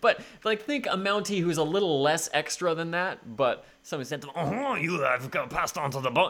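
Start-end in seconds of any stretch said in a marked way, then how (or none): 4.4-6.3 fake French accent, quieter. Imitating a Mountie in the cartoon: put-on French accent.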